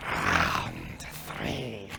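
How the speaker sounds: whispered, low, gravelly, rasping creature voice. The creature looks out at everyone and speaks in a low, gravelly voice. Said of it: "in that same low, gravelly voice says".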